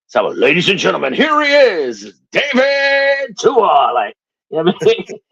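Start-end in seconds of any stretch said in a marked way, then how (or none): 0.2-3.9 big, drawn-out, swooping sports announcer voice. Showing how comedy events get introduced when emceeing: sports announcing voice. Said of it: "I use my sports announcing voice".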